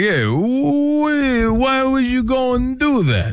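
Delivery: very slow, drawn-out drawl. Describing Rocky after losing his money: Rocky impression. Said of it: "He's like".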